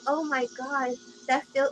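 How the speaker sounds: fake, put-on girly feminine voice. Retelling what a man said to the speaker: put-on girl voice. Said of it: "he started trying to talk in a girl voice".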